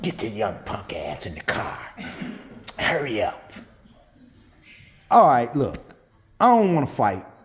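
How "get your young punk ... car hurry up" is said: whispered, put-on New York accent. Retelling the guy who insisted on driving your aunt's car, new york accent. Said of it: "With that New York accent".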